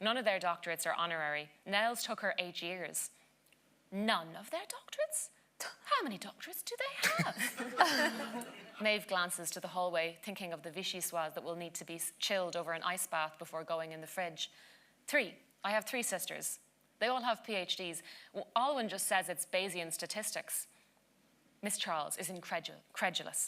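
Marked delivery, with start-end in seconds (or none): 3.9-8.5 put-on high, slow, posh British accent. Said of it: "that accent was brilliant".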